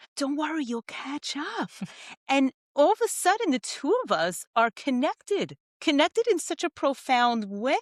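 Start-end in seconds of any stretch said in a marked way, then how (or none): 0.2-1.7 soft half-whisper, slightly high pitch. Speaker retells what he half-whispered back to her, half-whispering. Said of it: "I whispered back".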